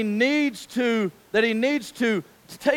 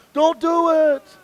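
play-acted calling out, raised and pitched up; 5 semitones higher, 4 dB louder than usual. Retelling stopping a baby heading for the bed edge: retelling calling out to a baby. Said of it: "I'm calling from him".

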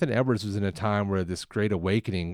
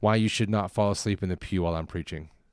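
ordinary talk, nothing marked

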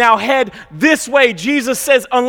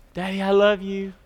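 small, soft little voice; 4 semitones lower, 7 dB quieter than usual. Retelling words heard while leaving the house: imitating a little voice. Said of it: "I hear this little voice".

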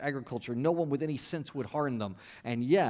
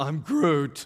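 put-on loud teen character voice; 6 dB louder than usual. Imagining listeners asking a question, in a teenage Groot voice. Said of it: "in your teenage Groot voice".

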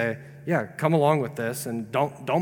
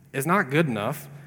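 ordinary talk, nothing marked

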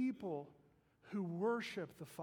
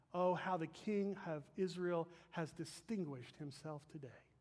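ordinary talk, nothing marked

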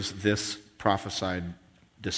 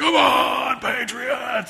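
ragged, very high, rough stadium scream; 4 dB louder than usual. Describing a zealous fan at a patriots game, imitating the fan screaming. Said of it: "and he's screaming".

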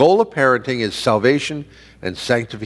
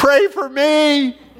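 mock shrill child's scream, very high-pitched. Retelling how a child, carried out of the service, screams: imitating a child screaming. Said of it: "the kid turns around and screams".

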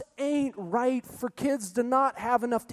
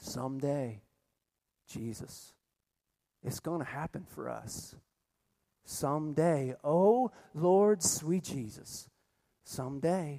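slow, soft, hushed half-whisper, barely aloud; 8 semitones lower, 6 dB quieter than usual. Retelling what a friend said while they talked: retelling a half-whispered line. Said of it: "she said with a whisper".

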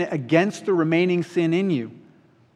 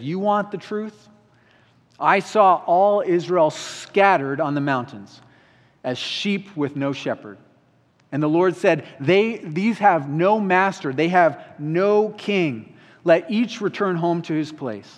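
plain

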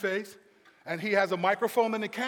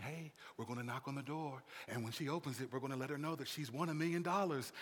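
very soft, hushed half-whisper; 7 semitones lower, 12 dB quieter than usual. Retelling a prize presenter at the door, imitating a half-whisper. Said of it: "he's whispering".

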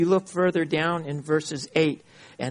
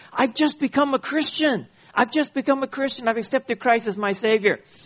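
thrilled, eager, excited voice, pitched up; 8 semitones higher than usual. Retelling a story where a father phones his son; acting out excited speech. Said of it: "he says very excitedly to his son".

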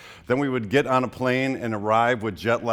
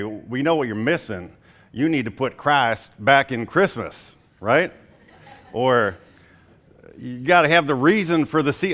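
put-on fake American Southern accent; 3 semitones higher, 4 dB louder than usual. Quoting what many Christians will probably say, in a put-on Southern accent. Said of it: "i don't know why i'm talking in a, a southern accent".

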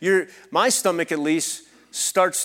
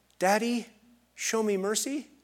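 put-on gentle, soft, high, super cute little-child voice; 5 semitones higher, 5 dB quieter than usual. Retelling a son's plea to his father facing a spanking: soft cute toddler voice. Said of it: "in a soft, super cute toddler voice".

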